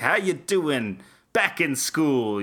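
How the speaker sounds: chummy, friendly cool-uncle voice. Imitating Alan Dershowitz greeting students at the dorms: Alan Dershowitz impression. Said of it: "he's like".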